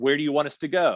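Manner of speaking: play-acted, called-out mild half-yell. Retelling a marathon moment, shouting back at a golf cart driver: retelling own yell. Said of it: "And I yell".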